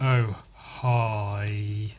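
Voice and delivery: low, sarcastic hi.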